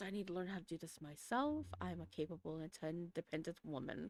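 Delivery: quiet mumbling under the breath. A woman fumbling with her phone talks to herself, mumbling to herself. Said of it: "as she mumbles".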